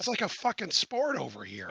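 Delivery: heavy Irish brogue, laid on thick, loud, swooping. Quoting a man's remark, in a thick Irish brogue. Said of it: "he's had a very thick Irish brogue".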